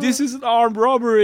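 play-acted wild, high, shrill shrieking scream. Retelling a documentary scene where men rob a shop, imitating someone screaming. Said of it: "bara skriker att man var".

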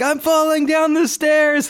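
very high, hammed-up, acted-out yelling. Retelling a prank phone call to a telemarketer, imitating someone yelling. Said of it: "he's like yelling like".

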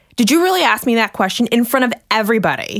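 put-on, sharp, angry snapped delivery. The speaker recalls him snapping at a fatigue question, retelling an angry snap. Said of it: "he totally snapped at me, looked at me, glared at me".

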